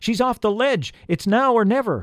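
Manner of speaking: very high, urgent, loud yell. One rescuer urges the others pulling the elf up on the rope, yelling. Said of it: "yelled Peter".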